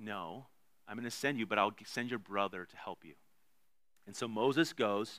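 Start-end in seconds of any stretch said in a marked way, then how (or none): 0.0-3.1 soft, mock, mildly exasperated set-straight reply. Retelling God's answer to Moses' request: imitating a slightly exasperated reply. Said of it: "a little exasperated".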